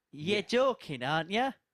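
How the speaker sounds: Middlesbrough accent with words run together. In an accent game, a player says the test phrase, Middlesbrough accent. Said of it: "There you go".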